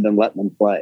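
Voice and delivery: ordinary talk, nothing marked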